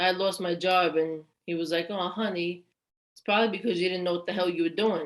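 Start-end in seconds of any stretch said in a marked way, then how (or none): 1.9-5.1 quick, sugary, honeyed fake-nice tone. Retelling what Dad said after the speaker lost a job, imitating a sweet tone. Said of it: "but in a sweet tone".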